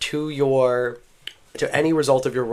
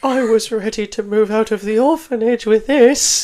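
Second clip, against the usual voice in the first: put-on very high, weepy, tearful child's crying voice; 10 semitones higher, 6 dB louder than usual. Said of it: "tears just begin to roll down his face".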